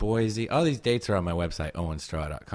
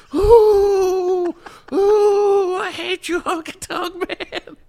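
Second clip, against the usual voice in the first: mock high child yell, much higher; 12 dB louder than usual. Retelling shouting from the crowd at a dancing man, in a high 10-year-old voice. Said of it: "your high frequency 10-year-old voice".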